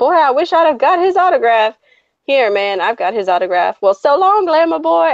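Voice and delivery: over-the-top put-on Southern accent. Imitating crow characters from a movie: crazy Southern accents. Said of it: "crazy Southern accents".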